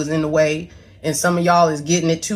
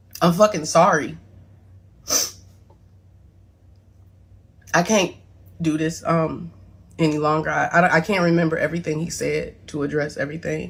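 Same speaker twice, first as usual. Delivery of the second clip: voice strained, close to crying. Apologizing and struggling to go on, holding back tears. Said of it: "I'm trying my best not to cry".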